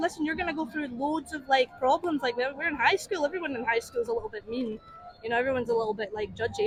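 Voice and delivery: ordinary talk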